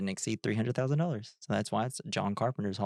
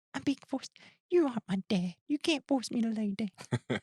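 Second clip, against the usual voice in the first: very high tiny chihuahua dog voice; 12 semitones higher than usual. Telling the chihuahua to lie down, then answering for her: Gracie voice. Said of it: "that's my Gracie voice".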